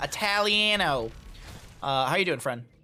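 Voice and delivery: put-on Midwestern accent. Greeting a viewer by name again: put-on Midwest accent. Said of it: "let me say it like I'm from the Midwest".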